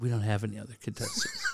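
spoken softly. Retelling what Paul said when Ben asked about another contestant, retelling a soft reply. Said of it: "Paul just softly said".

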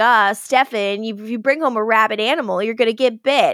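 mock sarcastic vampire voice. Retelling a TV scene where Damon is locked in the cellar: snarky Damon voice. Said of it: "being snarky".

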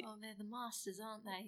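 hushed, murmured nature-documentary narrator voice. Talking about being taught, a speaker slips into a David Attenborough voice. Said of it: "You totally went a little bit David Attenborough".

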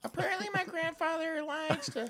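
put-on very high child voice. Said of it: "You guys know that apparently kid?".

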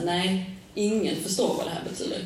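ordinary talk, nothing marked

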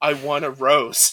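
slow, drawn-out shouting. Describing being the loudest one, shouting to the knight; retelling a shout. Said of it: "just shouting to my knight".

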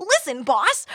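put-on very high, loud, overeager 1940s newsboy kid voice. Describing how a character delivers his line, the speaker does a 1940s newsie kid voice. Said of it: "He sounds like a 1940s like newsie kid".

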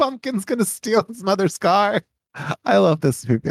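very high voice, giggling through the words. Describing a favorite gag from a movie, laughing while talking. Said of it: "I'm laughing too much".

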